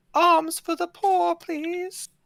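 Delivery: put-on very high-pitched young little girl's voice. Voicing a young girl knocking on the door at night: young girl's voice. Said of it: "you hear a young girl's voice".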